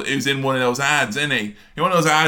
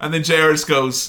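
ordinary talk

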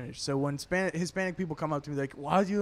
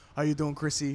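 mock old-fashioned dude voice. Retelling how an old school dude from the office greets people: imitating Frank. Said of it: "he's like".

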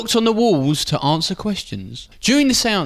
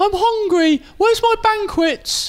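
squeaky, very high-pitched, regal king voice. Speaking as the king between an interviewer's questions: high-pitched Henry VIII voice. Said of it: "he had a high-pitched voice".

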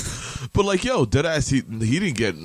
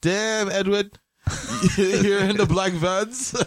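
put-on very high-pitched, slow, drawn-out Jamaican accent; 10 semitones higher than usual. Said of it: "do it like a [name] work voice".

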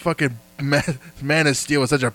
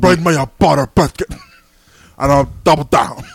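loud, put-on big, heavy-set old man voice; 7 dB louder than usual. Speaker puts on a voice during a bit, impression of a fat person. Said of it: "That's my impression of a fat person".

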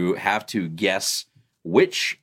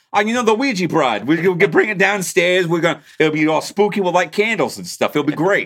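put-on New Jersey accent, very high and loud; 9 semitones higher, 6 dB louder than usual. Joking while reading a title aloud: New Jersey accent. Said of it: "I was saying it like I'm from New Jersey".

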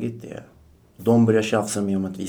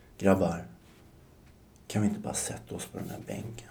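very soft, gentle, breathy near-whisper; 9 dB quieter than usual. Retelling what they said to the guys before the bridge, in a very soft voice. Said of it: "väldigt så här mjuk röst".

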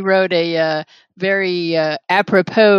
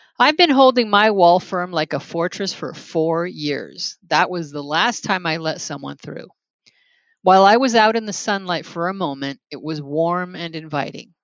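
usual speaking voice

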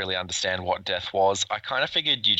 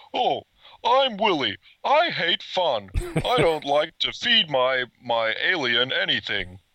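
high alien voice, pitch swinging up and around; 8 semitones higher, 3 dB louder than usual. On a podcast, another speaker asks for ALF; doing an ALF impression. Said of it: "I could probably do Alf doing Willie".

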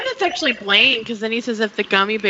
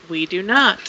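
put-on deadpan delivery in a much lower voice; 3 semitones lower than usual. Retelling Kurt's reply in the story, imitating Kurt's deadpan. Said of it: "Just Kurt's, like, deadpan".

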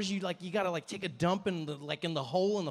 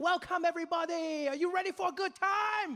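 very high, gushing, overeager cheerfulness, acted out; 10 semitones higher than usual. Retelling how a tour guide greeted the group: imitating overly happy tour guide. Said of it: "really happy, way too happy for that time".

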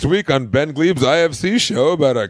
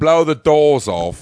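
exaggerated, drawn-out Cockney accent laid on thick. Cutting in on a Michael Caine bit: over-the-top Cockney voice. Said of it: "a more over-the-top Cockney, not Michael Caine voice".

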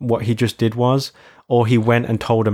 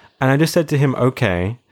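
ordinary talk

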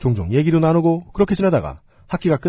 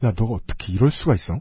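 put-on trembling, quavering, shaky voice; 6 semitones lower, 4 dB quieter than usual. Retelling what an older sister said to the narrator, imitating a trembling voice. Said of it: "떨리는 목소리로".

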